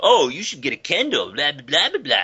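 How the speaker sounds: put-on condescending, obnoxious, dismissive guy voice. Retelling what a guy in a commercial says to a girl: imitating an obnoxious guy. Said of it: "his attitude is just so obnoxious".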